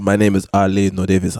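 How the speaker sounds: put-on Haitian accent. Saying a joke name after being told to use an accent: Haitian accent. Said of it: "I'll put my accent on there".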